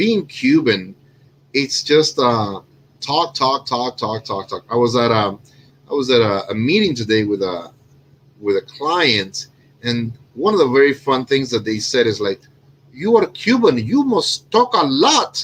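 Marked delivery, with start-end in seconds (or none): 12.9-15.4 put-on Indian English accent, pitched up. Recounting a meeting, the speaker quotes what a client said; mocking an indian accent. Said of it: "I'm making fun of the accent".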